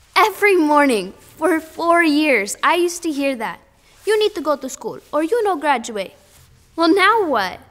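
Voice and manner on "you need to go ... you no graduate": put-on accent of the Dominican Republic. Recalling what you heard every morning for four years, imitate your mother's watered-down Dominican accent. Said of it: "with her watered-down Dominican accent".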